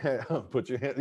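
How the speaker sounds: normal talking voice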